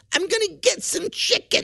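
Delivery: put-on very high-pitched little old lady voice. Retelling what an older woman said while leaving the show: imitating an older woman's delivery. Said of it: "And she said it like that".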